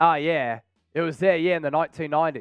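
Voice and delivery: put-on Australian accent. Quoting a viewer's jersey remark about the nineties in an Australian accent. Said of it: "I'm saying that in the Australian voice".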